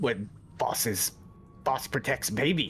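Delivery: kobold monster creature voice. Playing a kobold in a tabletop game, answering a question about its boss, in kobold voice. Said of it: "your kobold voice is like interfering hardcore".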